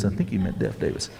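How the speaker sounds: low mumble under the breath. Retelling a correction said about a Civil War hero, muttered under the breath. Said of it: "Under my breath, like this".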